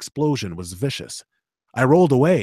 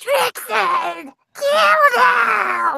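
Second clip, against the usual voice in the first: shrieking in pain and anger; 4 dB louder than usual. The wounded goblin captain, thrown into the dirt, calls to trixie, shrieking in pain and anger. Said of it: "He shrieked in pain and anger".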